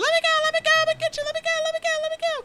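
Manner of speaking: put-on very high, loud screaming child voice.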